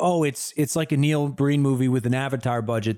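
normal talking voice

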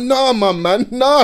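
put-on very slow, dragged-out, high, upset tone. Retelling complaining to mum about no accommodation: retelling own upset words. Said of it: "I'm there upset".

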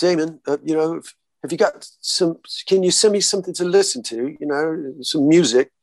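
put-on proper British accent. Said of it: "In that proper British accent".

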